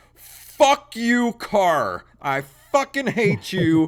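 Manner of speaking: deliberate, slow, fed-up, furious ranting. Ranting at a broken car over a repair bill, angry rant. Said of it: "I'm so angry right now".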